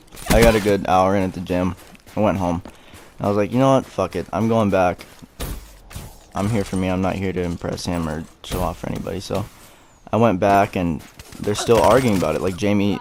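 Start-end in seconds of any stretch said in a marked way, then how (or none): none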